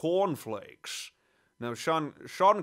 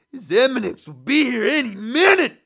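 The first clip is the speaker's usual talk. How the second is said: booming, high-pitched, loud celebrity-style voice; 9 semitones higher, 10 dB louder than usual. Doing a cartoon scene as an impression of an impression: Kirk Douglas impression. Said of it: "my uh, Kirk Douglas is basically uh, Maurice LaMarche's Kirk Douglas".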